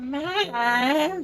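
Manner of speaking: put-on cartoon kid voice. Retelling voicing a little kid in a game: Cartman voice. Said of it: "I gave him a Cartman voice".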